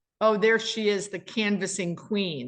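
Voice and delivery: ordinary talk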